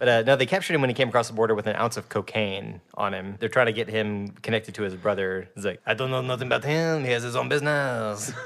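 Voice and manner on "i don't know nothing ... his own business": bad, cartoonish fake French accent. Retelling a TV character's line while mocking his fake accent: imitating a fake French accent. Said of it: "is it a real accent?".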